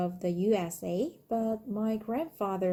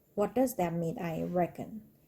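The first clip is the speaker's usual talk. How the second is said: ordinary talk, nothing marked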